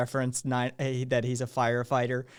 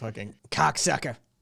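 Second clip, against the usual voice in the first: rough growl scraped out of throat. Doing a best Joey Diaz impression: Joey Diaz impression. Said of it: "best Joey Diaz I can do".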